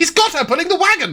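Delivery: very loud shouting. Acting out a character's line in a game scene: very loud. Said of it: "very loudly".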